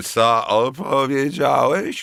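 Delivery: put-on slurred, drunken-sounding speech. A narrator reads a drunk man questioning the narrator: slurred drunken speech. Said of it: "Wybełkotał".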